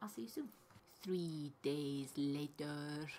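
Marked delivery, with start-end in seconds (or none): 1.0-3.1 terrible, hammy, put-on French narrator accent. Announcing a time jump as a joke: terrible SpongeBob French accent impression. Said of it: "terrible, um, SpongeBob French accent impression".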